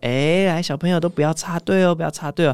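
gentle kindly voice, high pitch, soft and warm. Recalling asking line-cutting children not to cut in, retelling a gentle tone. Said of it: "用很温柔的语气说".

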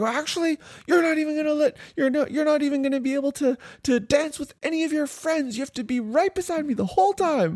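very high, mock escalating angry scold.

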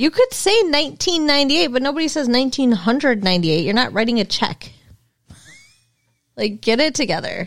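aggressive, combative, scolding rant. Arguing with another speaker about saying years: aggressive. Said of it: "Why are you so aggressive today?".

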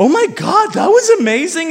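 high, swooping, amazed and excited gushing. Retelling a fight, imitating his girlfriend's excited praise. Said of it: "and she's like".

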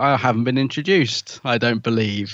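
put-on huffy computer voice. Retelling how the computer reacts to being left out: huffy Mister Smith impression. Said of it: "I like the fact he gets all huffy".

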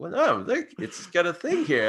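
jokey put-on Australian accent. Retelling own reply about a sandal with a bottle opener: comedy aussie accent. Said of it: "in a comedy Aussie accent".

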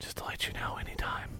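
put-on whisper. Retelling a warning whispered in a wrestling opponent's ear: retelling a whisper. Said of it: "I whispered in his ear".

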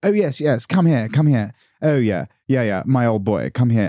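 put-on posh city-boy voice, no charm. Describing finance men sitting around a london bar, imitating posh finance men. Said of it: "they sort of sit around going".

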